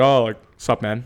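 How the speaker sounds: mock puffed-up deep voice. Retelling how a guy greeted the speaker, in a put-on deeper voice. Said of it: "and voice got deeper".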